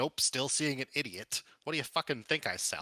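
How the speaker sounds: openly hostile, insulting tone. A seller snapping at a customer in a game scene, hostile. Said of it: "No need for hostilities".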